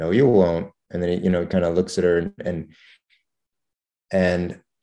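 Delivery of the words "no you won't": muttered quietly under the breath. Retelling a quiet reply to a promise to visit: imitating a mutter under the breath. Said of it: "said something like under her breath".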